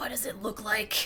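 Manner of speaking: rough, throaty, deep, raspy, guttural brute voice. Voicing a wounded shark answering a player: deep raspy guttural shark voice. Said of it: "deeper, raspier, guttural voice kind of dude".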